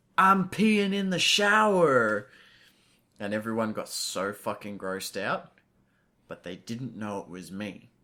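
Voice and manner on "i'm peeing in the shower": booming, loud, drawn-out shout, high pitch. Recounting messing around in camp showers, retelling a shout. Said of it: "I shouted out".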